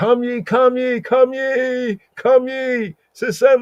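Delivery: very high, slow, drawn-out shrieking call. Explaining a word, showing how one proclaims an assembly: high shrieking call. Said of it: "they make their voice really high".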